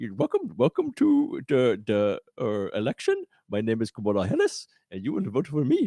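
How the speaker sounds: heavily exaggerated, sing-song Indian accent with swooping pitch. Joking that she should try a stereotypical Indian accent next. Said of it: "the most stereotypical seven eleven Indian accent".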